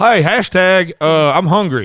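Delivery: loud, slow, calling grandpa voice. Imitating a grandfather who uses hashtags: imitating a grandfather. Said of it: "you sound like my grandfather".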